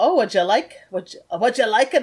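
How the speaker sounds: put-on Scottish-accented voice. Playing the bartender who catches someone looking, in a scottish accent. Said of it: "I don't need to be so freaking Scottish".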